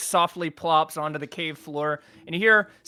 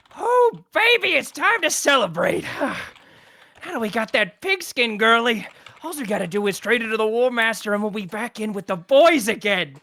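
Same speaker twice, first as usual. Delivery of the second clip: put-on slurred drunken goblin voice, higher pitched; 6 semitones higher, 3 dB louder than usual. Voicing drunk goblins overheard in a tunnel: drunk slurring goblin voice. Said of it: "hicking and slurring their words".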